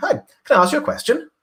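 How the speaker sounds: pitch goes up at the end. Speaker demonstrating how english speakers ask a question, rising at the end of question. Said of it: "We go up".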